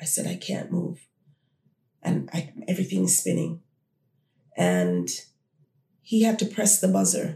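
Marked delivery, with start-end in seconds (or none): 0.3-3.6 acted whisper, quieter. Recounting tapping someone on the go train, retelling a whisper. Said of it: "I tapped him and I whispered".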